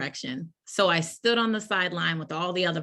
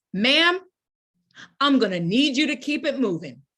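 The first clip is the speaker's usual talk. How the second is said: loud, raised, carrying voice, pitched up; 6 semitones higher, 5 dB louder than usual. Speaker retells what a woman said to her up close: really loud voice. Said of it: "said in a really loud voice".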